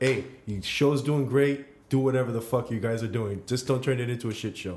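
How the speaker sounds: ordinary delivery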